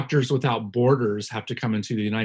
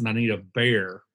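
mock, put-on Southern American accent. Showing how she talks once she starts getting drunk, put-on Southern accent. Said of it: "when I talk like this".

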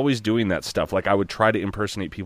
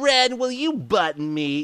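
goofy cartoon voice, much higher, slower; 14 semitones higher than usual. Speaker recalling a cartoon that always made them laugh tries its voice: Ren and Stimpy cartoon voice. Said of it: "Like that".

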